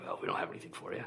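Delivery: rough, gravel-throated, raspy voice. Speaker imitates a man they recommend for the podcast, in a raspy gravelly voice. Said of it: "It's very raspy. It's very gravelly".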